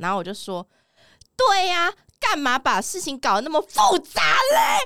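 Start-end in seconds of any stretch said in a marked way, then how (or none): 1.3-4.9 furious, slow, high, loud, drawn-out yell. Retelling a dream argument, quoting own comeback: imitating own shouting. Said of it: "我在用生命在吼他们".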